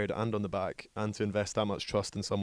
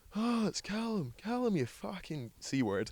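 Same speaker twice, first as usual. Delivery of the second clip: very high, stretched-out, drawn-out shout; 11 semitones higher, 3 dB quieter than usual. Retelling being called out across a ballroom, imitating someone shouting. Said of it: "he shouts at me and goes".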